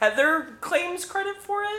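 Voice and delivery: very high, slow, incredulous.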